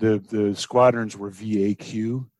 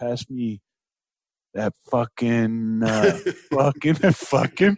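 put-on slow, drawn-out, hesitant New Jersey guy accent; 2 semitones higher than usual. Imitating a coworker who grew up nearby: imitating a coworker's Jersey accent. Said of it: "it's a Jerseyism".

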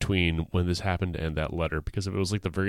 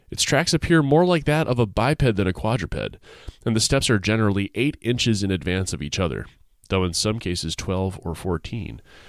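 ordinary talk, nothing marked

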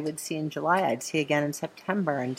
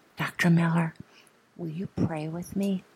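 put-on hushed voice. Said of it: "in this hushed little tone".

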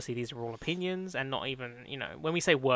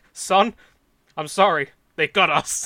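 very loud, slow, sincere delivery; 4 semitones higher, 14 dB louder than usual. Retelling a film scene where a father apologizes, sincere Henry Jones Senior impression. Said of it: "he says it so genuinely though".

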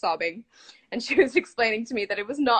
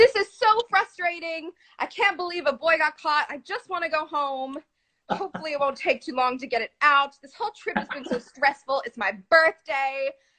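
pitched-up shouting in one long rant; 6 semitones higher than usual. Recalling hearing their mom from inside the room, the speaker imitates her shouting. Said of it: "I could hear my mom, like, shouting".

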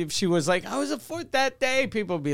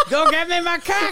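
put-on parrot-like Boston voice, much higher; 12 semitones higher, 8 dB louder than usual. Joking that a friend treats outsiders as cartoons, the speaker does a Boston bird impression. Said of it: "doing an impression of a Boston bird".

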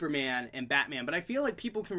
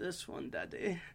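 soft put-on German accent; 3 semitones higher, 8 dB quieter than usual. Retelling handing Daddy a VHS at Blockbuster, in a German accent. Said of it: "This would be in my German accent".

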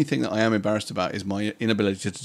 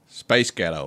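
low, attempted put-on American accent; 4 semitones lower than usual. Prompted by a friend, a speaker tries a phrase in an American accent.

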